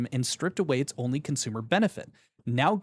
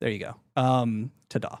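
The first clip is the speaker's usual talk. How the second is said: ordinary delivery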